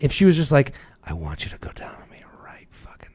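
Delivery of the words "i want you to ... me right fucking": hushed, very quiet whisper. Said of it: "but in a whisper".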